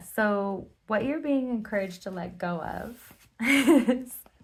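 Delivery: giggly voice, laughing through the words. Starting to name what the listener must let go of, giggling while talking. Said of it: "sorry, I'm really giggly".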